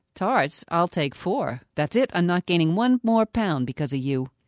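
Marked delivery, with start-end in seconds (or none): none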